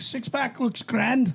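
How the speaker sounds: mock Liverpool accent. Quoting a fighter's favorite interview to friends: Paddy Pimblett Scouse accent. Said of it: "That Scouse accent is fucking unreal".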